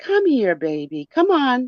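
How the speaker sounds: mock sugary coaxing. Retelling how Tommy calls out at night, imitating Tommy's sweet voice. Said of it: "Tommy starts with the sweet voice".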